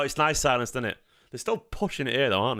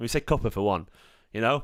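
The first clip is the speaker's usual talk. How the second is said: usual speaking voice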